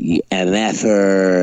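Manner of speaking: ordinary delivery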